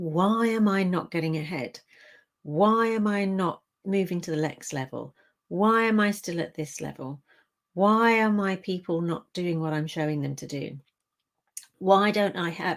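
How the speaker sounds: normal talking voice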